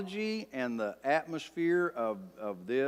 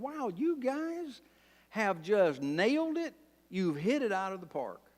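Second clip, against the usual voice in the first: heavy mocking sarcasm, pitched up; 9 semitones higher than usual. Paraphrasing Job's words to his friends: sarcastic as Job. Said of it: "this is extremely sarcastic right here".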